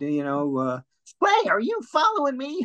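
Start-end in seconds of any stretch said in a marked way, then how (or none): 1.2-2.7 cartoon duck voice, much higher. Asked about other voices they do, the speaker demonstrates a Daffy Duck voice. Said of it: "I did Daffy Duck".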